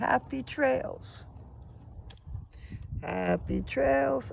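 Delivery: hoarse, rough, worn, nearly gone voice, very high. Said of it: "my voice is gone".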